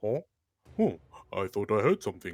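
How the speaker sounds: confused, puzzled guard voice, wondering aloud. Voicing a guard who stops and looks around: puzzled guard voice. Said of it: "One of them stops and looks".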